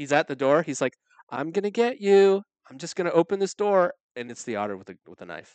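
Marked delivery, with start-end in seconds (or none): 1.3-3.9 put-on menacing, high, loud, creepy ten-year-old voice. Imagining a talking otter at the door, voicing it: talking like a 10-year-old. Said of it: "What if it talked like a 10-year-old?".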